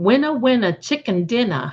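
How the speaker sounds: Boston accent with dropped r's. Congratulating an auntie who won: boston accent. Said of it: "in that Boston accent".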